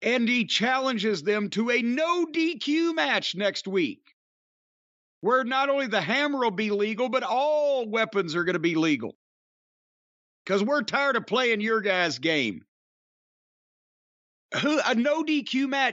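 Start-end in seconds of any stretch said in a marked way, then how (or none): none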